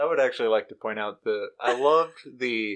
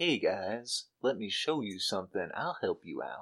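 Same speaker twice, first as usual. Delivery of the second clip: sleazy salesman voice, lower and quieter; 3 semitones lower, 7 dB quieter than usual. Imitating a character offering the boys help: sleazy used car salesman voice. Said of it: "that sleazy drug dealer, uh, used car salesman vibe".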